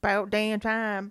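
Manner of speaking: put-on local Florida accent. Retelling a county's excitement about Disney building there, in a Florida accent. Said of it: "that was a good accent".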